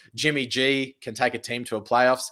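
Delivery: ordinary talk, nothing marked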